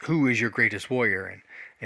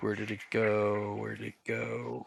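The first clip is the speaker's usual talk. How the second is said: soft, hushed half-whisper under the breath; 7 dB quieter than usual. Voicing a dragon who half-whispers in another's ear, half-whispering. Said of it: "he whispers".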